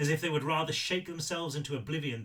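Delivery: ordinary delivery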